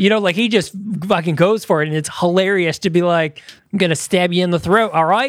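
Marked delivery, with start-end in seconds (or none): 3.7-5.3 put-on Australian accent. Describing Chris Hemsworth in the Extraction movies: Chris Hemsworth Australian impression. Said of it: "he'll say shit like an Australian would".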